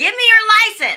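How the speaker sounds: rude, loud, high-pitched yelling. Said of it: "they're gonna yell".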